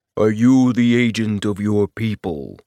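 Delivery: voice dropped deep, low-voiced. Reading aloud as Silk touches the imprint and an unseen voice speaks: deep booming voice. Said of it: "A deep voice boomed".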